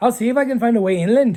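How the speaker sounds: Irish character voice. Reading a game character's line aloud in an Irish accent. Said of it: "I'm giving him an Irish accent".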